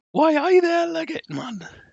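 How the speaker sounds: put-on very high-pitched Geordie accent, pushed way up. Voicing what Elena says when she walks over to you, in Elena's Geordie accent. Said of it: "I can only do Geordie accents if I'm really high pitched".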